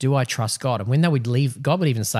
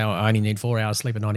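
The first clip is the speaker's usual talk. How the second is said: ordinary delivery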